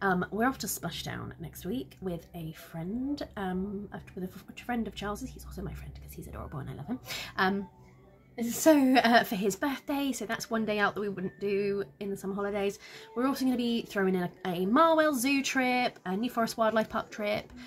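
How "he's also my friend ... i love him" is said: fast, soft, secretive whisper. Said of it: "I'm whispering this".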